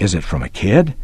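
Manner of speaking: fierce, intense, hushed whisper. A narrator reads a boy repeating his question, fierce whisper. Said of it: "Tommy repeated in a fierce whisper".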